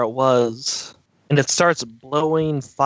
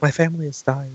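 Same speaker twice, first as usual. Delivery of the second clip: quiet, soft-spoken dragon voice. Voicing a dragon whose family is dying: quiet dragon voice. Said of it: "Could you speak up, Mister Dragon?".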